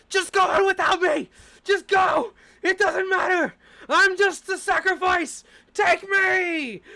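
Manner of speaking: frantic, very shrill, very high, very loud squirrel-like yell. Narrating a game scene where a grabbed creature bites and shouts, frantic shouting squirrel. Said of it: "it starts shouting".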